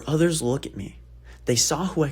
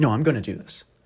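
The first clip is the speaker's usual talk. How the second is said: put-on stern tone; 2 semitones lower than usual. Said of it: "I'm talking sternly".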